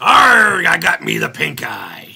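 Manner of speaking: very loud, rough, booming, drawn-out pirate growl. Looking through a pile of little parts, joking around: pirate voice. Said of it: "I did that like a fucking, a pirate".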